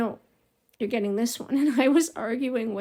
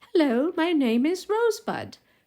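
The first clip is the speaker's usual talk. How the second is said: put-on doll-like British accent, pitched up; 5 semitones higher than usual. Imitating a favorite doll that talked: British accent. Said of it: "would say in a British accent".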